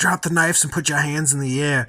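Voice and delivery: put-on Brooklyn accent. Repeating a cop's line from the scene being watched, in a put-on Brooklyn accent. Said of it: "That's such a Brooklyn accent".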